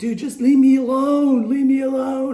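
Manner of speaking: acted, very high-pitched, shrill, loud, pleading scream. Retelling walking across the street while being screamed at: retelling own screaming. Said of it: "I'm screaming".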